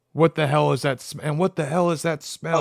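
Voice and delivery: ordinary talk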